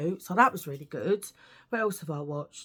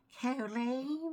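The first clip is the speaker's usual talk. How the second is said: tiny, high, soft, hushed voice; 5 semitones higher, 6 dB quieter than usual. Telling people about a little woman in an eighties film, do the Poltergeist woman voice. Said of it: "And she talks like that".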